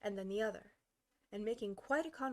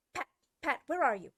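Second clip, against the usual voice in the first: furious, very loud angry shout; 4 semitones higher, 8 dB louder than usual. A narrator reads the rabbit calling out for pat, in an angry voice. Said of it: "Next came an angry voice, the rabbit's".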